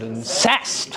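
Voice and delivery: incest stressed on second syllable, -cest. Reading an iambic verse line aloud, stress on second syllable of incest. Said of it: "put the syllable stress on there".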